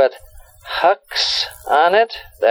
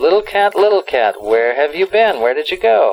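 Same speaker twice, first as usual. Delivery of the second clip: normal talking voice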